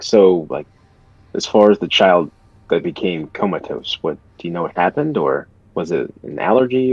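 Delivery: voice dropped slightly, hushed and discreet. Retelling asking a question so she can't hear, voice lowered a little. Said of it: "I'll kind of like lower my voice just a little bit so she can't hear me".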